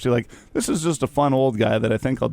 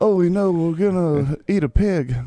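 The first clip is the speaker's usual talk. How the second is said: put-on Arkansas accent, higher pitch; 7 semitones higher than usual. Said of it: "he was more Arkansas".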